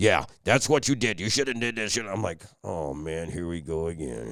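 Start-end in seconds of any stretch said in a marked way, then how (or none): 0.0-2.0 real deep, fast, lecturing voice. Speaker imitates a man lecturing him on TV: imitating a real deep voice. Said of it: "And he's got a real deep voice".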